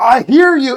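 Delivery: loud, high-pitched, sarcastic, mocking delivery.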